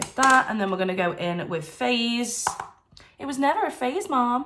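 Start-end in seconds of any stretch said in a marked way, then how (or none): 3.2-4.5 put-on American accent, pitched up throughout. An aside while applying colours, American accent. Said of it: "I don't know why I do that in an American accent".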